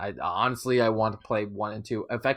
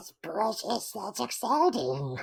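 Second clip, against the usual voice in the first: very high-pitched, strange put-on character voice; 11 semitones higher than usual. Reacting to news of a Gollum game: Gollum voice. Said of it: "that's a great Gollum voice".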